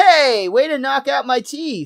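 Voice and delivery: high cry-out. Retelling a scene where a character gets hit, Milhouse crying out. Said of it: "you hear off screen Milhouse cry out".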